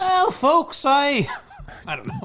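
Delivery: very high-pitched woman's voice. Asked by a co-host to do her tweet, the speaker attempts a Congresswoman Pressley impression. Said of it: "I was just trying to do a woman's voice".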